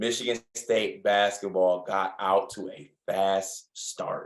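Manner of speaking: slow, deliberate, spelled-out, slowed-down delivery. Recapping a Michigan State basketball game, the speaker repeats a point, speaking slower. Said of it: "I'll say it slower so people can understand me".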